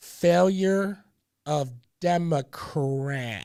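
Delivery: slow, deliberate, emphatic, word by word. Clarifying a point for people who misunderstood, saying it slowly. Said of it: "I'm saying it slowly".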